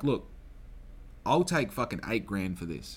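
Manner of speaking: ordinary talk, nothing marked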